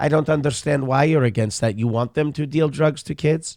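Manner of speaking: high, affected effeminate voice. Imitating a boxer's political speeches: Manny Pacquiao impression. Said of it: "he sounds like Latka from Taxi".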